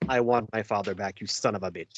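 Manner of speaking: intense, spine-chilling voice. Quoting a favorite movie line to the others: imitating Inigo's chilling revenge line. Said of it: "you gave us all chills just by reading it like that".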